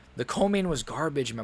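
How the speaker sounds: voice cracking. Complaining that the co-main event was garbage: voice cracking. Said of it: "My voice is cracking".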